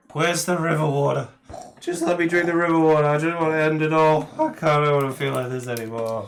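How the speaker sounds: put-on very loud, high, miserable drunk-sounding voice. Playing a character who is still a little drunk: acting drunk and hungover. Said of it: "you are hungover a little bit".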